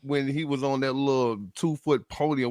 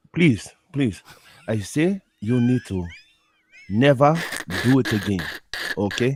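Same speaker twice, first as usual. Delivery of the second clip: put-on Nigerian-accented delivery; 2 semitones lower than usual. Telling the other speaker to stop their accent, in a nigerian accent. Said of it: "I think mine's better".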